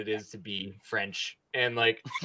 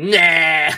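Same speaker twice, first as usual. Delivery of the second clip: very loud, high, drawn-out anime-style dismissive outburst; 6 semitones higher, 13 dB louder than usual. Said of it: "does, like, an anime thing".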